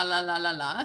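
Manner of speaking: low, lethargic, bored droning reading voice.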